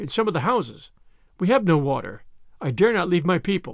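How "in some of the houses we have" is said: usual speaking voice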